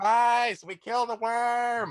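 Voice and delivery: booming, very high shout. Calling out to Spice with magic, in a voice booming three times louder. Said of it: "make my voice boom 3 times louder".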